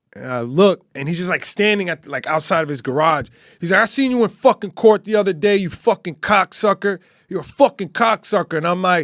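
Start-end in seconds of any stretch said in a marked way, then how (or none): 3.9-8.6 put-on yelling. Retelling a neighborhood run-in, imitating the stepfather yelling from outside his garage. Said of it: "the stepfather just yells out".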